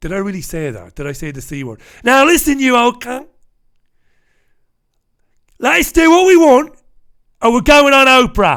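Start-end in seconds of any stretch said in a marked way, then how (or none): 2.0-8.6 bad put-on Cockney accent, very high, loud and shrill. Joking about a meeting with the Queen: bad Cockney accent. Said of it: "That was supposed to be a Cockney accent".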